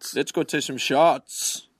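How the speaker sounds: put-on Scottish-accented voice. Repeating the same line to another speaker, who asks why they sound like Shrek. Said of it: "Why do you sound like Shrek?".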